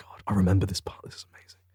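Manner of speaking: excited, awed, unvoiced whisper.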